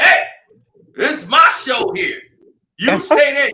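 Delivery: mock huffy, indignant, very loud outburst. Retelling a coach's reply to a watching parent: imitating an indignant coach. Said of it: "he got real indignant with [name]".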